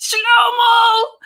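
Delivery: screamed out, high and loud.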